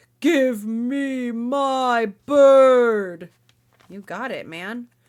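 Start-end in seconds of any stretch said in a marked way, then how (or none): 0.2-3.3 booming giant roar, very loud and very slow. Reading a story aloud, the narrator voices the giant: booming giant voice. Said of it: "The giant's voice booms".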